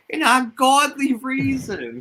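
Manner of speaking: put-on very high, loud old lady voice. Repeating another speaker's phrase when asked to, in an old lady voice. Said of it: "you have to say it like an old lady".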